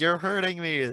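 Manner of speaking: play-acted, high, toned-down shout of pain. Describing a video of police dragging a man out, retelling a yell. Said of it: "He's like yelling and saying".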